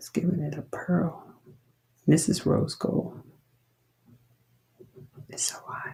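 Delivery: hushed, soft whisper under the breath. Showing off a heated rose gold finish, whispering. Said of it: "I don't know why I'm whispering".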